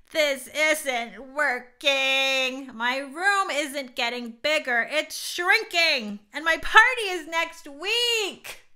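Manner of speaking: loud, complaining hollering with "week" drawn out. A girl lying on the floor calls out to her mom; hollering. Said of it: "She hollered".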